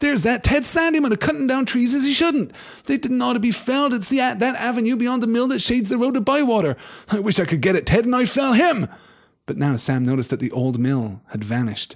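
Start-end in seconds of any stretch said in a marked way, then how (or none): 0.0-8.9 indignant, outraged, very high-pitched and loud. Reading the story aloud, the narrator voices Sam in an outraged voice. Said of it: "said Sam in an outraged voice".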